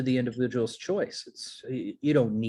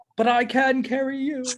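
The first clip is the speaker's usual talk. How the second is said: put-on very high, rustic West Country English accent; 12 semitones higher, 4 dB louder than usual. Demonstrating an accent with a line from Samwise Gamgee, in a West Country accent. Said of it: "it's supposed to be West Country British".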